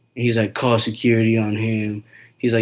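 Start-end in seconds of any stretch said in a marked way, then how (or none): none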